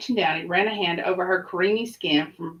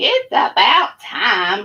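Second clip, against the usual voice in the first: loud, swooping, put-on fairy-tale witch voice; 2 semitones higher, 7 dB louder than usual. Reading a favorite story aloud to Vincey, giving a character a witch voice. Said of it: "I'm going to do the witch voice for this one".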